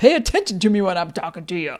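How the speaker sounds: rooster character voice. Retelling a father's line, imitating Foghorn Leghorn. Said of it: "Dad, you're doing a foghorn".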